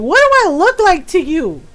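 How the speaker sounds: real anger, loud with swooping pitch. Retelling answering a stranger who called her girl: imitating own angry retort. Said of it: "I got real mad".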